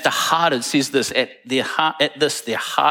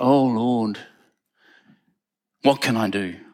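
mock whining, lower pitch; 3 semitones lower than usual. Speaker acting out a man complaining to the Lord, mock-whinging.

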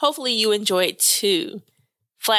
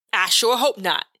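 spitting out the words. Frank answers her question about the hospital, spitting the words out. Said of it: "Frank spits out".

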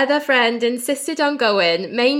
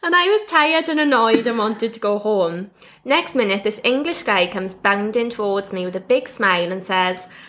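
usual speaking voice

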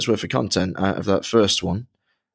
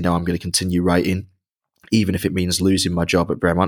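usual speaking voice

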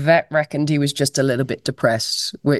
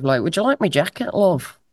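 terrible put-on Liverpudlian accent, higher pitch; 3 semitones higher than usual. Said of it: "That's my Liverpudlian accent, it's terrible".

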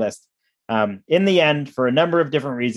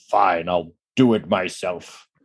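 deep, low, dropped movie-villain voice; 6 semitones lower than usual. Speaker retelling what they said a few months ago, Thanos impression. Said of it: "in my best Thanos impression".

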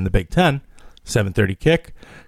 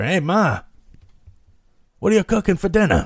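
put-on old man Italian accent, pitched up; 8 semitones higher than usual. Playing an old italian guy talking to his mother: put-on italian accent. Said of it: "Like you're some old Italian guy talking to his old mother".

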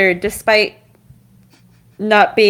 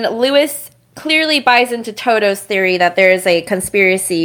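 usual speaking voice

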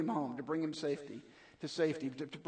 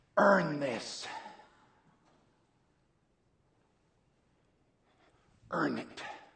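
deliberate, slow, raised, drawn-out words; 6 dB louder than usual. Retelling a dying captain's last words to a rescued soldier: imitating Captain Miller's whisper. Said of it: "and he kinda whispers it".

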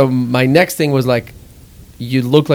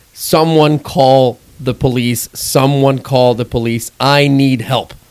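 normal talking voice

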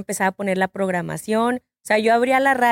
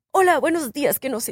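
radio announcer voice, pitched up; 4 semitones higher than usual. Retelling how a tall young man greeted her when she worked as a waitress, imitating an announcer voice. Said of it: "Así con esa voz de locutor".

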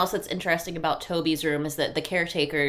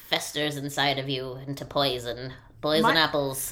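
put-on storybook witch voice; 3 semitones lower than usual. Chatting with a co-speaker, the speaker slips into a witch voice. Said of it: "That was a good voice".

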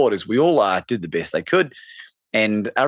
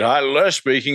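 big, chocolatey phone voice; 3 semitones higher than usual. Retelling a phone call, the caller answering: Les Brown's big chocolate voice. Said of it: "in that big chocolate voice of his".

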